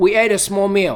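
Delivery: plain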